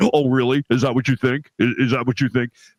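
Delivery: low, sarcastic, scoffing tone. Imagining a voice that could insult you while you're driving, answer the driver in a Kapler voice. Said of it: "you should do it in your Kapler voice".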